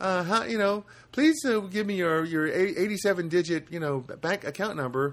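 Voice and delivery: pitched way up like a call center rep. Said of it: "right away she goes".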